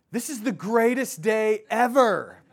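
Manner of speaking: put-on high-pitched child voice, shouting loudly to carry. Retelling a five-year-old son yelling in a theater: imitating a child yelling. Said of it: "he yells out loud enough for the entire theater to hear".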